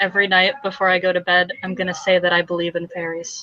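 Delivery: dead serious, solemn, heartfelt, earnest tone. Speaking in character, hand on another's shoulder: very serious. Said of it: "she very seriously puts her hand on his shoulder and she goes".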